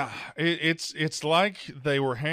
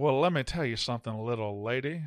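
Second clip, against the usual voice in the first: worst imaginable fake put-on Texas accent; 3 semitones lower than usual. Mocking an actor's terrible accent for your listener, Frank Langella's put-on Texas accent. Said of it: "that's better than he did".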